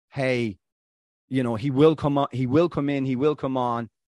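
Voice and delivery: ordinary talk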